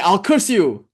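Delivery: play-acted, sudden, fully angry, menacing voice. Retelling how a man at a temple got angry when refused money, imitating an angry threat. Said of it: "And he got all angry".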